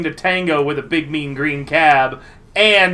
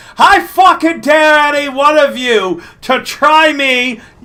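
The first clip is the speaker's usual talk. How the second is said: put-on heavy Scottish accent, very high, thick shout; 11 semitones higher, 6 dB louder than usual. Narrator voicing a gonk with a shotgun in the sunroof, yelling in thick Scottish accent. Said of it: "in a very thick Scottish accent".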